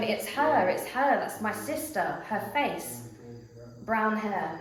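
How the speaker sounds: plain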